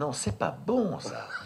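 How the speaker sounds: acted, softly kind, gentle tone. Acting out how she tells someone to do it again, imitating someone speaking gently. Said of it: "C'est qu'elle le dit gentiment".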